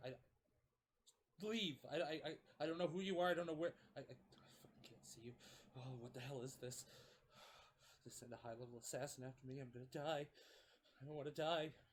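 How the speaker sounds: terrified, stammering character voice. Voicing a character whose hand shakes in front of an assassin: terrified stammering character. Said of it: "his hand is shaking".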